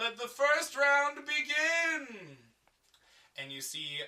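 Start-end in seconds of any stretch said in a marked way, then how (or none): 0.0-2.4 shrill, high, slow announcer yell, start drawn out. The narrator voices the guy starting the first round: announcer yelling out. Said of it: "And the guy yells out".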